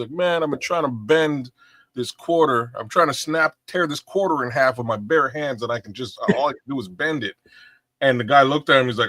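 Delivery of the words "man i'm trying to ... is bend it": usual speaking voice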